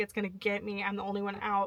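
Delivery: mock crying, tearful, panicked voice. Retelling not knowing a prayer others were saying: retelling own crying panic. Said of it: "crying because I can't say this prayer".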